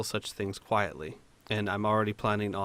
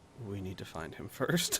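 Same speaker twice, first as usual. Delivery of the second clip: very quiet, slow, murmured delivery; 6 dB quieter than usual. Voicing a character who turns to the others: very quiet voice. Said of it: "very quietly say".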